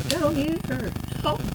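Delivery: put-on faint child voice. Game master voicing a young boy calling out to the players, faint young boy's voice. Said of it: "you definitely hear a young boy's voice saying".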